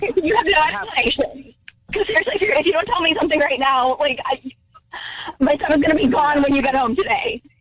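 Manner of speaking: audibly distressed and upset voice. Demanding an explanation from a husband or she will leave, clearly upset. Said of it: "Jackie's clearly upset".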